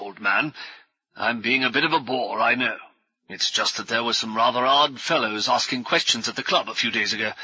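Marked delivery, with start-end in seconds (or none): none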